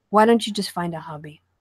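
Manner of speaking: usual speaking voice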